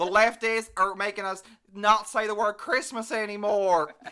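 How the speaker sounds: very loud TV pundit-style voice. Teasing the other speaker by sounding like a Republican woman on Fox News. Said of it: "sounded like a Republican woman on Fox News, being like".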